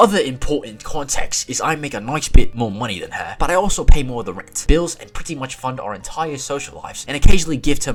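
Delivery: put-on British accent. Reading aloud a British guy's story about rent and bills, British accent. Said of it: "I gotta read this in a British accent the rest of the time. Here we go".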